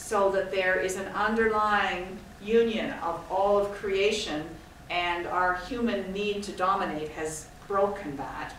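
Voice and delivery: ordinary talk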